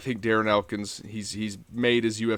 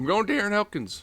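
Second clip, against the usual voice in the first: very high voice, cracking and breaking; 11 semitones higher than usual. Giving a fight pick while still a little sick, voice cracking. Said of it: "voice crack".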